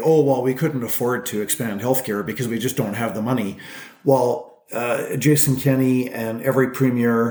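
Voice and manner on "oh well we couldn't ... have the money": usual speaking voice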